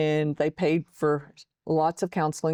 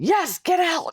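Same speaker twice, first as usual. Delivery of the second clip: acted, piercing, very high-pitched shrill shriek; 13 semitones higher, 4 dB louder than usual. Retelling the reply to a husband who asked "You good?": imitating own past scream. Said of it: "I just scream at him".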